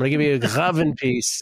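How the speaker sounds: put-on elderly man, Yiddish accent. Answering a co-host's request for a warning, in an old yiddish man voice. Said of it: "why do I sound like I'm an old Yiddish man".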